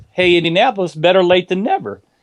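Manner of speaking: ordinary delivery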